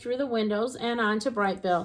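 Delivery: plain reading voice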